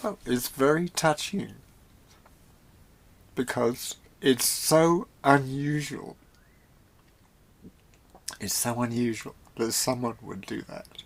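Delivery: speaking through tears. Speaking to another speaker after cutting them off, crying while talking. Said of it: "so now I'm crying".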